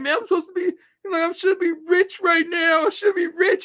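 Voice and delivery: put-on very high, loud, tearful wailing cry. Retelling what a friend said to him, imitating the friend crying. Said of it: "He's like crying".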